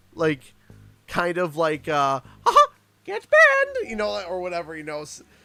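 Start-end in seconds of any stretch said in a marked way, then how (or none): 2.5-3.9 very high, very loud aggressive barking yell. Showing the only way he can do the voice: aggressive Mickey Mouse voice. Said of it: "I can only do Mickey Mouse when he's being like aggressive".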